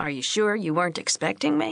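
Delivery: playfully teasing, swooping pitch. Narrator reads a man's line to a woman he has just surprised, teasing. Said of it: "he teased".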